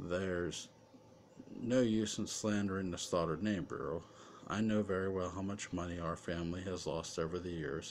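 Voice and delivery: ordinary delivery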